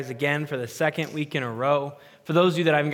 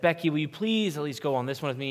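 put-on pleading, quieter; 4 dB quieter than usual. Speaker retells their dad asking their mom onto a roller coaster, retelling his pleading. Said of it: "He like pleaded her".

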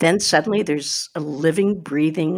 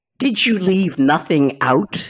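over-dramatic, histrionic, loud, boozy outburst; 3 dB louder than usual. Retelling what mom exclaimed during the play: imitating a histrionic loud bourbon baritone. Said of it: "in a very histrionic, loud bourbon baritone, exclaimed".

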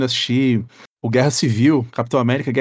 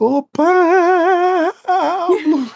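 very loud, very high, drawn-out holler; 3 dB louder than usual. Retelling how a guy arrived at a kid's house and called out: retelling a loud shout. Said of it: "gritou muito alto".

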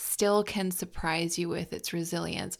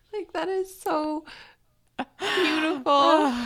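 very high, tearful crying voice; 10 semitones higher, 5 dB louder than usual. Reacting to a moving story just heard, crying while talking. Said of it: "I'm actually, like, crying".

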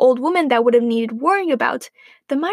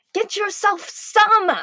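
irritated, snapping voice, pitched up; 7 semitones higher than usual. Mother replies to Grandma's request for milk; snapped, irritated. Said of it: "snapped Mother, irritated".

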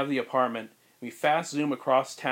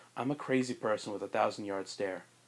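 low, soft, crazed unhinged voice with blank stare. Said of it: "It's Tobey Maguire in".

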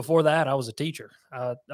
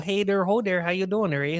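heavy Minnesota-Canadian accent; 6 semitones higher than usual. A guest on a show playing up his accent, in a put-on Canadian-style accent. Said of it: "You got to get that Canadian".

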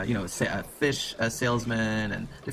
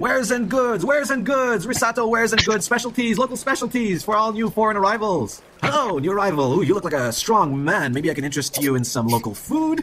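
very high, loud hawker's market-vendor yell; 11 semitones higher, 7 dB louder than usual. A game master voices a market vendor calling to new foreign arrivals, yelling. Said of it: "you hear him yelling".

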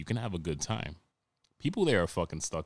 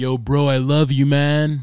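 mock, very loud, close-mic, drawn-out, happy drunk gushing; 8 semitones higher, 14 dB louder than usual. Showing how he sounds in your ear when drunk: imitating his drunk self close in your ear. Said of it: "I got really close to the mic, but I had to give you the effect".

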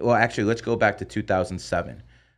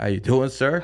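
polite tone, higher voice with the bass removed; 5 semitones higher than usual. Retelling answering a man who calls back, taking bass out of voice. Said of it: "I take some bass out of my voice".

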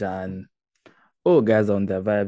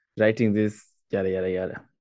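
plain

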